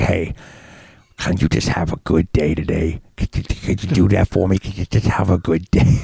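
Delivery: put-on lisp pushed through stuffed, puffed cheeks. Recalling a favourite cartoon character's lines: William Murderface voice. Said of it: "I used to love Murderface when he'd be like".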